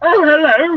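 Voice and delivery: creepy, high, loud voice.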